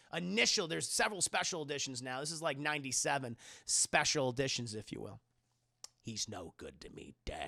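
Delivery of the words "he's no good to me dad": deep, very low, soft, hushed gravelly voice. Talking about the pre-Attack of the Clones special editions, speaker does the O G Boba Fett voice. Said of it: "I'm gonna go with O G Boba Fett voice".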